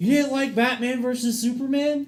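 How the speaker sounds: high, sarcastic tone. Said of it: "That was very much sarcasm".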